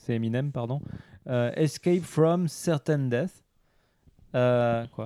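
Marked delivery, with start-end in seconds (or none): 1.6-3.4 put-on English accent. Reading out an English game title in a list: English accent. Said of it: "mon accent est fabuleux".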